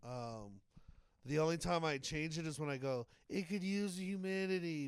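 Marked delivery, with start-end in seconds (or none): 3.3-4.9 grumbling, complaining voice of a woman. Speaker describes the one line they voice differently, mock complaining lady voice. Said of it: "I do it in a complaining voice because it was the lady".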